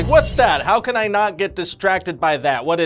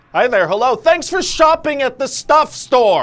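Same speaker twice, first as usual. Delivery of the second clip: far too loud, high-pitched voice; 8 semitones higher, 4 dB louder than usual. Greeting a shopper at a self-checkout too loudly: talking too loud. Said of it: "you don't need to talk so loud".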